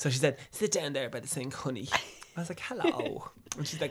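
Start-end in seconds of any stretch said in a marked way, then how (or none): 0.5-1.9 put-on hairdresser voice, North Dublin accent. Retelling how Sarah put on a hairdresser voice to make it fun, North Dublin hairdresser Shar voice. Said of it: "put on this voice of like this North Dublin hairdresser".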